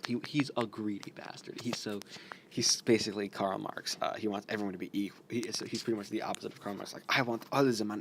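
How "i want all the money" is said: put-on German accent. Describing a greedy villain and voicing him, in a put-on German accent. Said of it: "Why did I do a German accent for that?".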